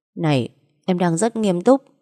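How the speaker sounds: ordinary delivery, nothing marked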